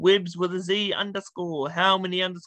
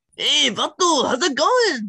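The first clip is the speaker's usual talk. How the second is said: put-on Mexican gangster accent, raised and slow; 7 semitones higher, 6 dB louder than usual. Showing an impression when asked to do it: mexican gangster voice. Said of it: "a Mexican gangster".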